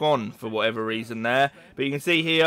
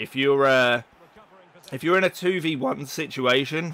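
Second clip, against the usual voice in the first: voice breaking and cracking mid-phrase. Narrating gameplay footage and explaining a move, voice cracking. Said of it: "voice crack".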